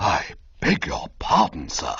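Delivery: muted, low, hushed voice. Narrator reads a character reacting to the cummerbund, hushed voice. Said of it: "he said in a sort of hushed voice".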